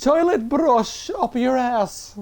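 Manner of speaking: slow, affected, put-on upper-class posh accent. Trying a line out in a posh voice: put-on posh voice. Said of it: "let's try and do this in a posh voice".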